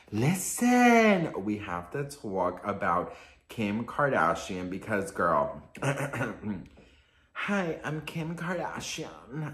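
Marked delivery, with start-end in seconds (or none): 7.3-9.5 quiet, unhurried voice. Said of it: "No, I can't do her voice".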